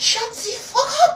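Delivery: put-on high-pitched, shrill, loud yelling French accent. Retelling shouting at him while still in a french accent. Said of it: "I had that accent down".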